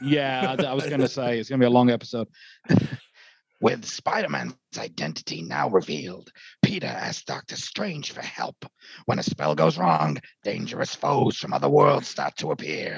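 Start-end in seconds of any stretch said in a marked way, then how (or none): 3.6-13.0 gravelly, creaky acted voice. Reading a Spider-Man movie synopsis aloud: Willem Dafoe voice. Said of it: "in the voice of Willem Dafoe".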